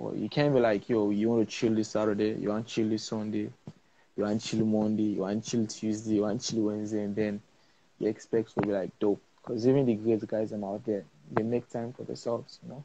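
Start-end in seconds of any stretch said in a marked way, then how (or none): none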